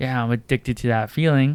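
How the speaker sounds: ordinary delivery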